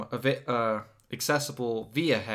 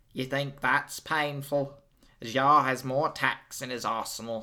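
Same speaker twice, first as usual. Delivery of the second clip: put-on made-up, unplaceable accent, loosely like New Zealand. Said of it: "this is a New Zealand accent you're doing".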